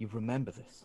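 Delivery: quiet muttering under the breath. A player character turns to the droid, muttering under his breath. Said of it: "sort of like under my breath".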